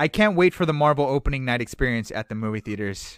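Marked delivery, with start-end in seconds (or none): none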